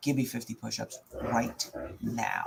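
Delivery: very low, quiet, hushed, barely contained anger. Retelling what he quietly told a man who kept at it in line: retelling a quiet, angry order. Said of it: "I said quietly, ... if I'm saying it like that, I'm pissed off".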